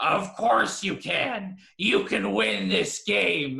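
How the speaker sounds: rough-edged growl. Retelling a movie line to another speaker: Harrison Ford growl. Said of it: "in that traditional growl just goes".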